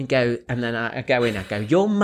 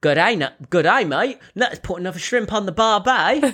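clumsy, high-pitched put-on Australian accent; 8 semitones higher than usual. Showing the line always used for an Australian accent: bad Australian accent. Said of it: "I'm not very good at Australia".

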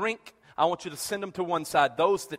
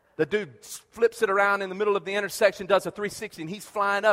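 ordinary talk, nothing marked

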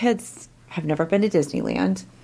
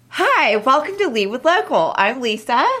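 very chipper, bright, sing-song delivery; 7 semitones higher, 3 dB louder than usual. A host opening a podcast episode with a welcome and introduction, chipper. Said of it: "that was a very chipper welcome".

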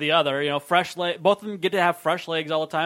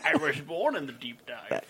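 put-on slow, drawn-out British accent; 3 semitones lower, 7 dB quieter than usual. Quoting a movie villain line about the deep dive: British Bane voice. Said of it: "Why was that British Bane?".

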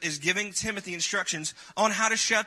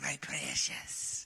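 hoarse whispered voice; 4 semitones lower, 9 dB quieter than usual. Explaining the books to listeners, quoting Gollum in a raspy Gollum voice. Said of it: "he said it in that raspy voice".

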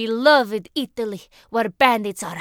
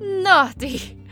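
shocked, horrified gasp, pitched high; 8 semitones higher than usual. One of the men reacts to the girl's words with a horrified gasp. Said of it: "gasped Benny with a horrified look".

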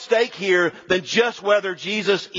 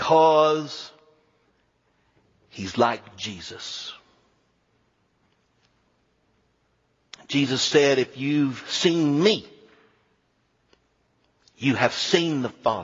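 put-on low South Carolina accent; 5 semitones lower than usual. Quoting a man's answer to a question, in his little South Carolina accent. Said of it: "he said in his little South Carolina accent".

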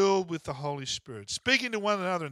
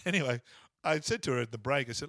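normal talking voice

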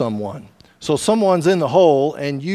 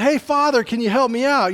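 acted-out, pitched-up shout; 8 semitones higher than usual. Telling a story, the speaker acts out a man in a hole calling to a priest, acting out a shout for help. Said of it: "the guy in the hole shouts out".

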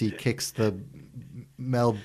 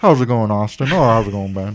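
very loud, belting put-on rock-star voice; 9 dB louder than usual. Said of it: "just adopted [name] voices".

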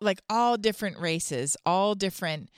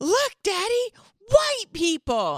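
put-on play-acted very high, swooping, amazed little-boy shout; 14 semitones higher, 4 dB louder than usual. Retelling what a boy yelled while pointing ahead, imitating a really loud yell. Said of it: "he yells really loud".

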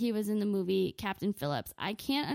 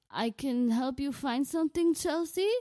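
bad, weak, barely-managed put-on Somali accent; 4 semitones higher than usual. Retelling what a man behind her in the store said, bad Somali pirate accent. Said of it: "let alone a Somali pirate accent".

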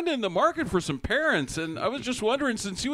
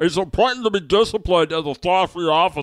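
put-on mouth-full voice, lower and louder; 4 semitones lower, 9 dB louder than usual. Imitating a character talking with his mouth full: imitating Picard talking with mouth full. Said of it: "he starts talking with his mouth full".

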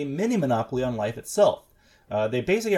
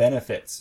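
benefits said ironically, in audible scare quotes. Talking about company towns, saying benefits with audible quotation marks. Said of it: "I don't know if you guys heard it in my voice, but that was quotations around the word benefits".

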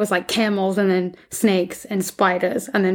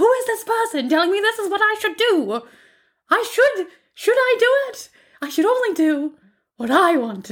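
acted scream, higher; 12 semitones higher than usual. Retelling how she sits and rants about advice: imitating someone screaming. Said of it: "sitting there screaming".

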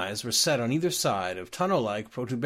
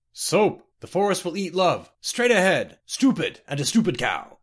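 booming voice, pitched-up call; 6 semitones higher, 4 dB louder than usual. A sudden voice from the jungle glade startles Decumus Scotty; booming voice. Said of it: "The voice boomed out".

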